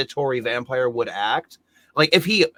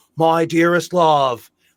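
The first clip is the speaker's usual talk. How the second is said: mock, deliberately bad British accent; 3 semitones higher, 4 dB louder than usual. Mocking an actor's awful British accent: imitating Keanu Reeves' bad British accent. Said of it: "him and Winona Ryder both doing a British accent that just sounds awful".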